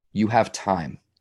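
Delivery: soothing, calming, peaceful reassuring tone. Retelling a mentor's reply to a worried question: imitating someone speaking peacefully. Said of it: "he said it with such a peace and a calming".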